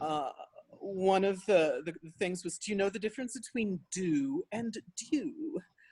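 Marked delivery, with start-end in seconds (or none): 2.6-5.6 posh, very proper British English. Retelling a London publisher's revision letter: very proper British voice. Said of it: "in a very proper British voice".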